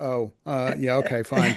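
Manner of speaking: mock dejected, downcast tone. Retelling how a mother reacted on seeing the club: imitating a dejected mother. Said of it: "my mother's dejected look".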